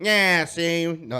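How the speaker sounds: put-on tough-guy New York mobster accent. Showing the accent they have to have, New York mobster accent. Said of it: "they have to have that that New York accent".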